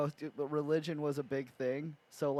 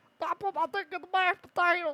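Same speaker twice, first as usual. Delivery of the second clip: very high, loud, squealing, cartoonish put-on voice; 5 dB louder than usual. Retelling what a guy said while doing a voice, in a Bill Cosby-like voice. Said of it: "sounds more or less like a Beetlejuice Bill Cosby".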